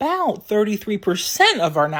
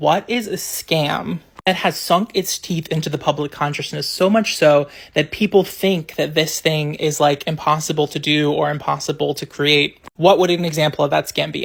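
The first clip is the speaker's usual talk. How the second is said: ordinary talk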